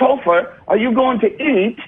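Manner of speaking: very high, put-on British accent and phrasing. Retelling a week spent among UK comics, imitating his own British-sounding phrasing. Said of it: "I would start to phrase it like all the U K".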